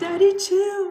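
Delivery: very high, loud, put-on camp voice.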